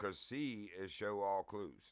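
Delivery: stress on C.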